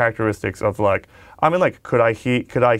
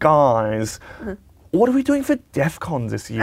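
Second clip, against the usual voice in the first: fake British accent with guys drawn out long; 4 semitones higher than usual. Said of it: "you put on pretty much a British accent".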